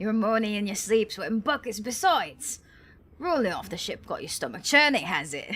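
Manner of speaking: put-on Australian-sounding accent. Voicing a character in an unvoiced cutscene: put-on Australian accent. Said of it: "Why does he sound Australian?".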